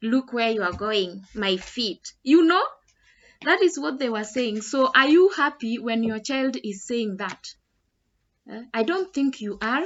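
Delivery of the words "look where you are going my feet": mock taunting, sarcastic mocking tone. Retelling what children said to mock a stranger: imitating kids mocking sarcastically. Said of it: "saying it sarcastically and in a mockery".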